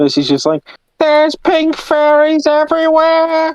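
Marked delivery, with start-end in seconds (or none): 1.0-3.6 put-on British character voice, higher pitch. Voicing Percy in a joke about a coal stash: accurate Percy voice. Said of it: "That was a really good, accurate voice of the U K".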